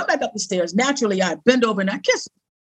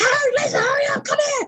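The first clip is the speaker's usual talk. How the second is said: put-on, very high-pitched hollering scream. Retelling how she screamed from her room to the kitchen, imitating someone screaming. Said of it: "she's screaming".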